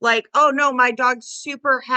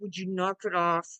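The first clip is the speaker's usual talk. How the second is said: low, growly, grumbling voice; 5 semitones lower, 10 dB quieter than usual. Retelling what they say to a child: imitating a grumble. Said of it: "and we grumble at 'em".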